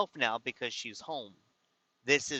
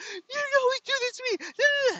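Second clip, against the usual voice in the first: very high, furious, angry screaming; 4 dB louder than usual. Speaker retells an argument over directions, imitating Levon screaming. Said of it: "she starts screaming".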